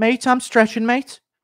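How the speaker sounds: shrill, high, loud voice. Answering a chat request to imitate Till and Paddy doing yoga. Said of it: "Do a Till and Paddy doing yoga impression".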